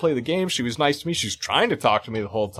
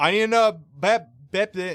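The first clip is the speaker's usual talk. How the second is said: mimicked speech manner, pitched higher; 4 semitones higher than usual. Retelling what a deaf woman said while ordering: imitating a deaf woman's speech. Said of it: "this lady's sitting there talking to me like".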